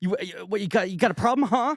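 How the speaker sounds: very high-pitched, pushy, aggressive, confrontational voice. Retelling a movie scene, quoting the character: imitating Dory acting aggressive. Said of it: "she does the aggro".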